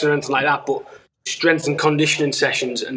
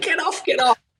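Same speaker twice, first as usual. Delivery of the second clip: put-on squeal, high, then higher; 14 semitones higher than usual. Retelling being held in an armbar by a brother: retelling a squeal. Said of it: "squealing like a little pig".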